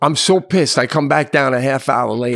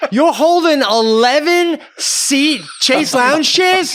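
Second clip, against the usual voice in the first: very high, drawn-out hollered yell; 13 semitones higher, 3 dB louder than usual. Retelling an argument over pool towels with a guy on the beach: retelling yelling at someone. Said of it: "I yell to him as he's coming over".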